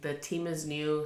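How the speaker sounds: ordinary delivery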